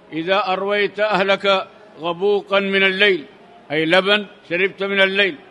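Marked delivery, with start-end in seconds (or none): none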